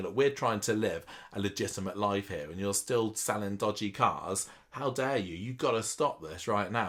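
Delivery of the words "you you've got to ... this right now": ordinary talk, nothing marked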